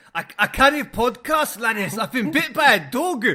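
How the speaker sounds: put-on Scottish accent. Imagining the message from the man bitten by a dog, in a put-on scottish voice. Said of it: "imagine that in this Scottish voice".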